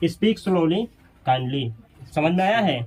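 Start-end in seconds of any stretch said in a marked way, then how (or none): 0.0-1.7 brief break before kind tone. Teacher shows how to build speak slowly kindly, short pause before kindly. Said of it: "पहले इसको बोल करके थोड़ा सा पॉज देना है और लास्ट में बोलना है काइंडली".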